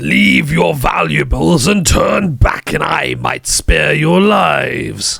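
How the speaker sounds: loud, rough, shouting dragon voice. Narrating a huge dragon that shouts at you, dragon shouting. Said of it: "It shouts".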